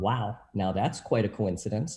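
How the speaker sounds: imitated, mock sarcastic tone. Retelling a thought after reading a Bible verse: imitating own sarcastic thought. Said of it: "I'm saying that sarcastically".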